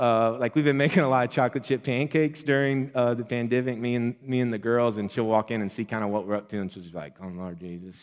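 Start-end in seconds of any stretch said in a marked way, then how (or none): 7.2-8.0 put-on muttering under breath, lower and quieter. Retelling how Rachel reacts to a kitchen mess: imitating Rachel muttering under her breath. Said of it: "under her breath".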